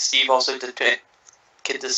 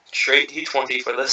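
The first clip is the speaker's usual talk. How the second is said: normal talking voice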